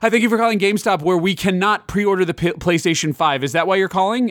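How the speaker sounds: peppy, bright voice. Retelling how a gamestop store worker answered the phone: imitating an energetic greeting. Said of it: "this girl answered very energetically".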